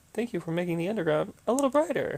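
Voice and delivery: forced-cheerful, fake enthusiastic robot voice. Voicing a robot character, in a fake enthusiastic robot voice. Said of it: "I tried to make the robot sound fake enthusiastic".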